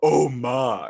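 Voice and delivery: loud, big celebrity-style exclamation. Showing a mimic's recreated line: George Takei impression. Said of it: "George Takei, where he's like".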